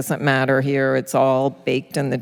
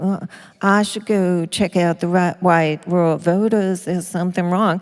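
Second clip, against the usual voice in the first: derisive mocking Southern drawl, pitched up; 5 semitones higher than usual. Retelling how a campaign manager mocked someone: retelling a mocking Southern accent. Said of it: "imitating his Southern accent".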